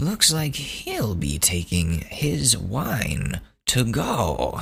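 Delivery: very slow narrator voice with swooping pitch. Imitating the TV voiceover after a man walks out: Chris Hansen voiceover. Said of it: "classic Chris Hansen voiceover".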